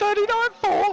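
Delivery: voice gone high. Commentating a race as lap times come in, in a high-pitched voice. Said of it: "apologies for the high pitched voice there".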